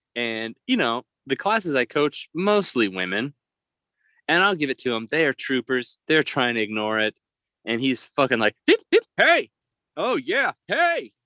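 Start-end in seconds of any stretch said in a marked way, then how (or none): 8.7-11.1 put-on very high, aggressive, heckling shout. Retelling how an aggressive man yelled at the class: imitating an aggressive shout. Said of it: "he's so aggressive".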